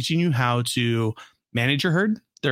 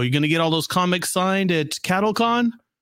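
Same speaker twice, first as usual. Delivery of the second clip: put-on snide, sarcastic ribbing tone, mocking; 4 semitones higher than usual. Recounting two guys passing by on the way to MegaCon, retelling a sarcastic remark. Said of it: "we thought they were just being sarcastic".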